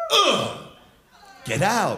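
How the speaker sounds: swooping, disgusted, dismissive brush-off tone. Speaking to the room, doing an impression of a one-night stand. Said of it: "Here's my impression of a one-night stand".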